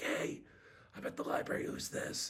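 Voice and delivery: soft, breathy, hushed whisper. Retelling answering a cold call at the library: imitating own whisper. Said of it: "I answer the phone whispering".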